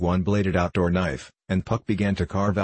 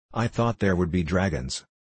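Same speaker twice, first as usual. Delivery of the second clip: usual speaking voice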